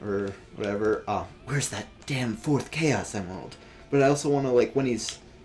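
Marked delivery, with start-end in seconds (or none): 1.5-3.6 low, quiet whispered muttering to oneself. Showing how the character should sound talking to himself, in a low whisper. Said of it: "that sort of like whisper when he's like speaking low".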